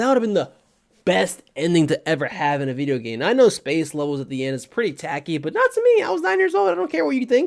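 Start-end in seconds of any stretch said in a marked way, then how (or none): 5.4-7.5 frustrated, voice pushed much higher-pitched. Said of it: "you can probably hear a little frustration in my voice".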